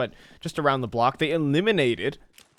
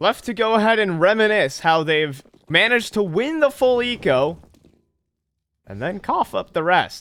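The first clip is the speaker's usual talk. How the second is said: controlled, deliberate leap up the register; 6 semitones higher, 3 dB louder than usual. Commentating a match round, deliberately going high. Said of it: "That wasn't a voice crack. That was actually me going like that high".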